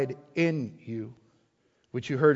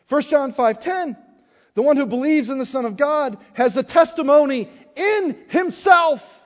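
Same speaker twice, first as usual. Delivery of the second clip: excitedly yelling and screaming; 11 semitones higher, 6 dB louder than usual. Reading Bible verses aloud, too excited to hold back: excited shouting. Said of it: "I'm going to scream it because I'm excited".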